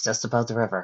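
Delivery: ordinary delivery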